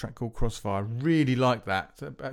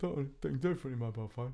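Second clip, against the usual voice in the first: very soft, hushed speech through a yawn; 9 dB quieter than usual. Late in the day, talking to listeners, yawning while talking. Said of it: "Sorry, I'm yawning".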